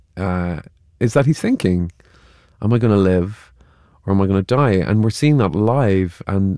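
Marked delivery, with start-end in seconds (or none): none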